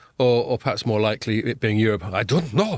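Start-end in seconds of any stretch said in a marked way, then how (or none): 2.1-2.8 put-on, attempted German accent. Voicing Europe hesitating over a decision: attempted German accent. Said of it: "or whatever a German accent sounds".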